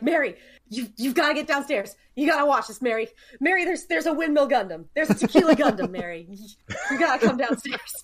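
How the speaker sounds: normal talking voice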